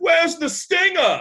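high, loud, taunting called-out tone. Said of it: "he's like".

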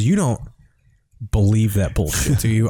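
earnest, convincing, dead serious delivery. Retelling a comic who fooled the car with a straight-faced bluff: imitating a convincingly serious question. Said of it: "he sold it so well".

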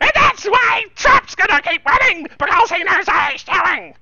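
very high, loud, strangled, forced-out voice. Doing an impression of Judge Jeanine: Judge Jeanine impression. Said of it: "trying to eat a live cat".

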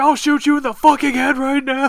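put-on shouting, high-pitched yelling. Describing a movie scene, the speaker quotes a character, retelling a yell. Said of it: "He's just yelling at".

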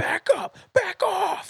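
very high, very slow, shrill rasping drawn-out yell. Retelling what the girl pointing a gun said: imitating someone yelling. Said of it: "she starts yelling".

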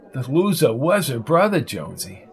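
plain

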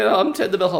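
very high, squeaky, cartoony voice. Describing a film's bellhop character, imitating his squeaky cartoony voice. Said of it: "With an often squeaky, cartoony voice".

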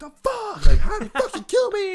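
swooping, raging shrill scream, very high and very loud. Retelling playing Xbox at 6 a.m. and getting killed, retelling his own scream. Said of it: "I'm fucking screaming".

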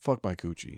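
put-on sexy, fake seductive tone. Joking with the co-host, saying a crude line: put-on sexy voice. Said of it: "that sounded sexy".

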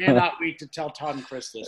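ordinary delivery

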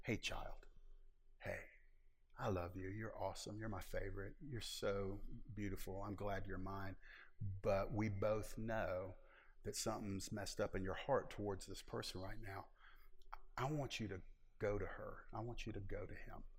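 gentle whispering. Voicing the Lord speaking to a believer at odds with someone: gently whispering. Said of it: "the Lord just gently whispers".

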